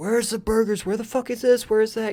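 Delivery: shrill, very high, loud angry screaming. Retelling a supervisor yelling at the kids in the back, imitating a screaming supervisor. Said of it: "screaming at him, just yelling at him".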